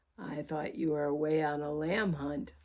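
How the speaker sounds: low, growly, rumbling creature growl. Narrator reads the creature speaking to Utopia as they dance, low growly voice. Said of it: "growled the creature".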